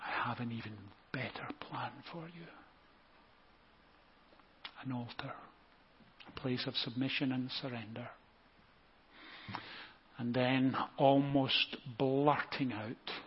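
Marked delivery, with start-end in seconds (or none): 0.0-2.5 soft, hushed, gentle half-whisper. Voicing god speaking to a listener's soul: half-whispering. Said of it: "he whispers to your soul".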